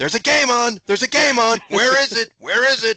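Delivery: play-acted shrill, very high-pitched, loud yelling. Retelling a brother yelling at whoever was listening: imitating someone yelling. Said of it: "Your brother kept on going".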